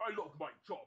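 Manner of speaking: put-on Cockney accent. A gamer describing changing a character's voice in Saints Row, Cockney accent. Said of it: "you give yourself the Cockney".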